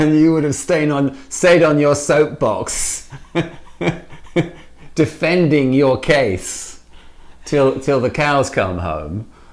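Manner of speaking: high-pitched, with bursts of laughter through words. Talking to the other person about how past disagreements went, laughing while talking.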